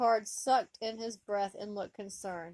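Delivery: ordinary delivery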